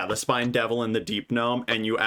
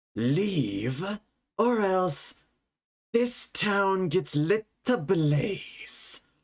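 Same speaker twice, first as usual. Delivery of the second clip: menacing, threatening, higher-pitched voice; 8 semitones higher than usual. Voicing a mysterious voice in the players' heads that orders them to leave: menacing threat. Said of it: "you are threatening".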